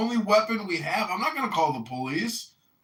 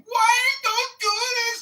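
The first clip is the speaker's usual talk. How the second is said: shrill, very high, loud put-on screaming; 5 dB louder than usual. Retelling what a passing woman yelled at her partner: imitating a woman screaming. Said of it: "she was screaming".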